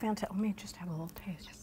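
secretive, barely-there, very quiet whisper. Tasting a malted milk chocolate cookie during a pairing, whispering. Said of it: "Why am I whispering?".

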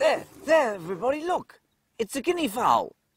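gushing fake excitement.

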